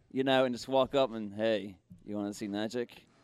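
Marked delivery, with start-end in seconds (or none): 1.3-2.9 low, quiet monotone voice. Recalling wanting to approach people who didn't know him, in a monotone David Blaine voice. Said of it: "I wanted to talk in a monotone".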